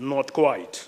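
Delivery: stately, noble, dignified delivery. Recalling how Leslie Campbell would politely refuse: imitating Leslie Campbell's noble voice. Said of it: "in that kind of noble voice".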